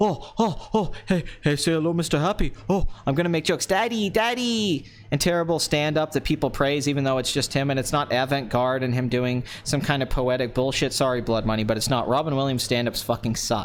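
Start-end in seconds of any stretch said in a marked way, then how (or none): 0.0-4.8 mocking, scornful, comic parody voice. Mocking a comedian's stand-up style: Robin Williams impression. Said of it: "I'm not Robin Williams, where I have to get on cocaine to go".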